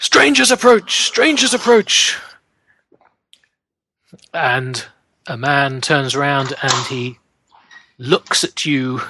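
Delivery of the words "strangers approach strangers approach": very high, very loud raised cry. Narrating, the speaker voices robed men spotting approaching riders: shouting.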